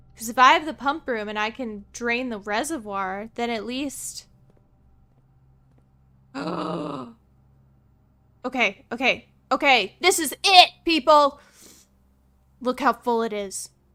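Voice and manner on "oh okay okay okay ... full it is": thrilled, excited yelling. Seeing how full the reservoir is, excited yelling. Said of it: "Sorry for yelling".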